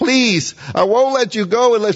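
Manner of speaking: crying, begging tone. Acting out a man wrestling an angel, mock crying and pleading. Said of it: "He's crying and pleading and begging".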